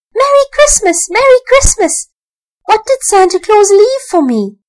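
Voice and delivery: very high-pitched, excited shouting. Narrator reads Archie racing downstairs on Christmas morning, crying out. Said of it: "came racing downstairs in his little pyjamas crying".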